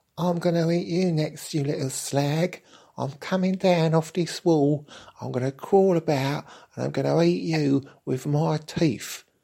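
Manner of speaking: put-on very high, camp London accent. Narrating a story, voicing the talking cobweb's threat: camp London accent. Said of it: "elucidate its thoughts on what would happen next in a rather camp London accent".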